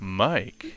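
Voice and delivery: sultry put-on voice, fake sexy and seductive. Saying own name when introduced at the start: mock erotic voice.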